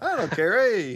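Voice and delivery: very slow, high, loud put-on Italian accent. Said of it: "You gotta do it in your best Ita-, or Italian accent".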